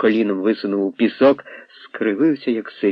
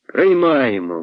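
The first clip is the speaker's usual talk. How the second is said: called out loudly, shouted; 4 semitones higher than usual. The boys answer their leader about taking Kolya in: shouted. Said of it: "гукнули хлопці".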